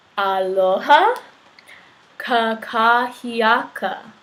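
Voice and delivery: said slowly, at a slow pace. Teaching listeners a greeting and modeling it for them: said slowly. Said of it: "Try saying that slowly".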